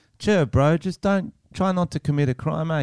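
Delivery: put-on New Zealand accent. Acting out a New Zealand cop talking to a would-be criminal, imitating a New Zealand accent. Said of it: "the cops comes in with that accent like".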